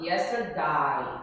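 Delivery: final syllable of yesterday said as eye. English lesson on a variant's pronunciation: yesterday ending in 'eye'. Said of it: "a palavra yesterday vai ficar pronunciada assim, ó".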